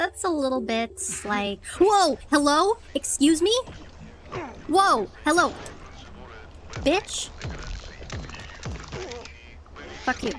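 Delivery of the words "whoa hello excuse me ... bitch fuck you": scared, startled, jumpy jolted outbursts. A streamer mid-explanation is suddenly surprised in the game, startled and scared. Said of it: "Scared the crap out of me".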